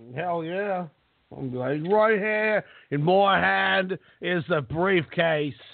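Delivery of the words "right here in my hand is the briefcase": fake British accent, slow and unhurried. Acting out a joke bit, speaks in a put-on british accent. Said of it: "That was my British accent".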